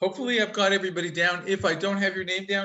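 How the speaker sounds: rushed, fast speech. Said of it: "the reason I'm speaking so quickly".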